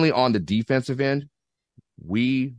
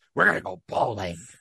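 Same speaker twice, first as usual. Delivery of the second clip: mock announcer voice, not gravelly. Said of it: "Let me use my Vince McMahon voice".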